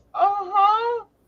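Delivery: high squeaky uh-huh, voice jumping up an octave.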